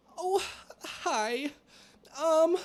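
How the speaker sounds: very high squeaky voice. Doing an impression of Roberta on request: imitating Roberta, Piglet-like voice. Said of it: "Do an impression right now".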